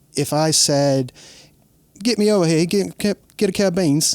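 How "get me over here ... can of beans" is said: put-on London Cockney accent, pitched up. Asking a guest who grew up in the UK to interpret a line: put-on Cockney accent. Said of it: "with that accent".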